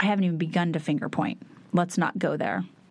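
normal talking voice

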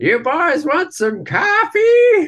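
very high, drawn-out, swooping cowboy holler. Retelling how an old cowboy yelled from a cabin door: imitating a cowboy yelling. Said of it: "this crazy cowboy comes popping out of the door with this cup of coffee and yells".

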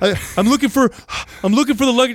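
out-of-breath panting. Retelling a friend's panicked answer on the phone: imitating Doug breathing hard. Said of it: "he's breathing hard".

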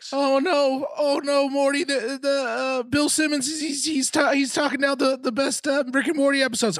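very high-pitched, slow stammering delivery. Doing a bit about Bill Simmons ranking episodes: Morty voice. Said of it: "I forgot how to do Morty".

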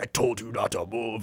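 mock grim, deadly earnest, crazed madman-like delivery. Retelling a man warning the woman he tied up, imitating a super serious man. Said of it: "he was like super serious, like crazy person".

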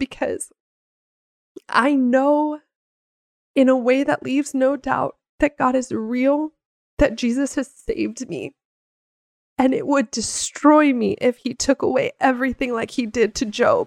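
tearful, crying while talking. Explaining why faith matters after infertility, crying while talking. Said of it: "that's why I'm crying right now".

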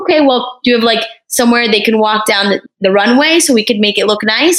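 ordinary delivery

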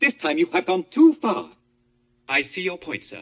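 hyperactive robot voice. Describing how someone sounds like a Star Wars robot, in a C-3PO voice. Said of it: "sounds like C-3PO from Star Wars".

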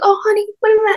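very high, sugary fake-sweet voice. Speaker imitating how their mom talks to service people, in a fake sweet voice. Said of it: "because she thinks it's like so sweet".

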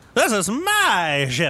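high, slow, booming, boastful little captain voice.

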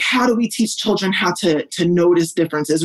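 ordinary delivery

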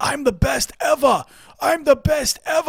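put-on high, slow, drawn-out scream in New York accent. Retelling a fighter jumping on the cage in celebration: imitating Phil Baroni screaming, New York accent. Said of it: "just screaming with that thick New York accent".

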